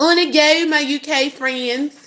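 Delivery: fake country accent, slow and drawn out. Addressing UK friends, the speaker slips into an accent: put-on country accent. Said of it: "That was country".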